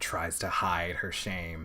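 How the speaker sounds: slow, whispered, choked-up emotional voice.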